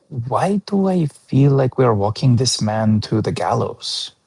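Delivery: quiet half-whispered voice. Leaning over to speak to Gerard in the game: half-whispering to Gerard. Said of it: "just a whisper to Gerard".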